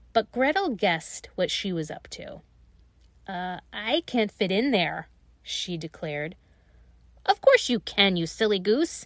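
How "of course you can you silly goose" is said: sharp, snapping witch voice. Narrator reading the witch's retort to Gretel, snapped. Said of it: "snapped the witch".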